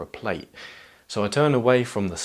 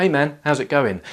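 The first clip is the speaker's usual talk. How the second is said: pitched-up, raised, friendly tone; 5 semitones higher, 5 dB louder than usual. Recounting how he greeted a new stranger, retelling a friendly greeting. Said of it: "in a friendly voice".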